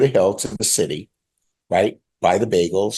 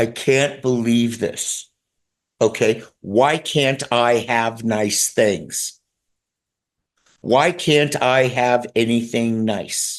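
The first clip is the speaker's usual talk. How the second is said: drawn-out, weepy, tearful, despairing cry; 4 semitones higher than usual. Speaker recounts breaking down alone in their car: retelling a tearful scream. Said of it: "this is what I'm screaming in my car".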